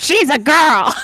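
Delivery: hero voice, cartoon style. Recalling the episode where Mega Girl showed up, doing Mega Man's voice. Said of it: "can you do Mega Man's voice?".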